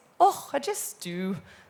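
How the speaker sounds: loud, slow, put-on Scottish accent. Quoting what he always replied, in an attempted Scottish accent. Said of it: "That's my attempt at a Scottish accent".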